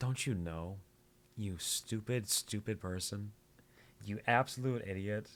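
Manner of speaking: put-on condescending tone. Mimicking a game character who sounds condescending: imitating a condescending tone. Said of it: "condescending to me".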